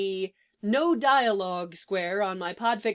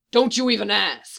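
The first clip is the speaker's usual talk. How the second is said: cautioning tone, louder; 6 dB louder than usual. A man speaking to a reporter, warning him off; warning. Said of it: "he warns the reporter".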